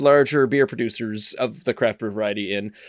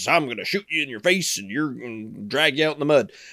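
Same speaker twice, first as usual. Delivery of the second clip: put-on Texas accent. Comparing regional accents, giving an example in a Texas accent. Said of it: "like a Texas".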